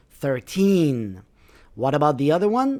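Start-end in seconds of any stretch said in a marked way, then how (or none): 0.2-1.3 put-on thirteen with weight on second syllable teen. Teaching word stress with numbers, stress on TEEN in thirteen. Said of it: "so the stress is on the second part of the word".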